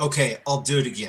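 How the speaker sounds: put-on reluctant, put-upon, grudging, annoyed tone. Retelling a voice heard on audio evidence: imitating a grudging, annoyed reply. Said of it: "And an attitude of like".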